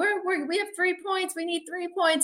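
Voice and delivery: shrill, very high-pitched scream. Retelling a phone call during a game, imitating George screaming. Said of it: "he's screaming".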